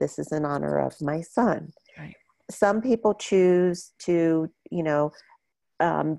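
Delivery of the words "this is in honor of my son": quiet, soft put-on voice. Retelling what a mother said with each meal she gave, imitating her speaking quietly. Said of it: "she quietly said".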